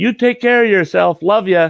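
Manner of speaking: very high loud yell. Retelling calling out to her as the door shuts, retelling a yell. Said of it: "I'll yell at her".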